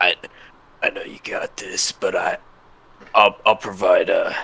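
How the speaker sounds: confiding, stage half-whispered aside. A character speaks to a companion before an arena fight, half-whispering. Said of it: "I'm gonna whisper to Magnus and say".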